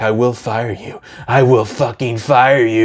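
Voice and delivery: mock dead-serious, intense, menacing tone. Describing a meme of a man at a desk, imitating an intense threat. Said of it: "he's so intense".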